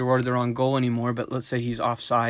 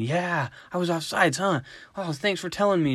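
mock, worked-up, high-pitched, excited kid voice; 6 semitones higher than usual. Acting out a young player's reply to his coach after a goal: imitating a kid's excitement. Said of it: "he's just all excited about it".

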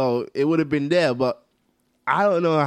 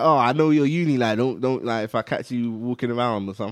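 ordinary talk, nothing marked

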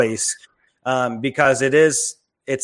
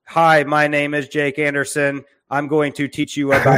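flat, energy-free, monotone robot voice; 2 semitones higher than usual. Showing how a robot would deliver the message: monotone robot voice. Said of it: "have a robot that just says".

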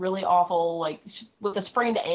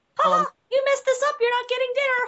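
put-on derpy cartoon mouse voice; 4 dB louder than usual. Imitating a pageant parent scolding a child, derpy Mickey Mouse voice. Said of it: "in the same, like, derpy voice, like Mickey Mouse".

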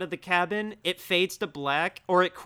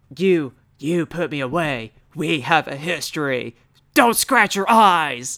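loud, raised, belted-out doctor voice; 2 semitones lower, 7 dB louder than usual. Acting out the eye doctor as Nick Cage would play him: Nicolas Cage as the eye doctor. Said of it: "how could you not want Nick Cage to be the, the, the doctor going".

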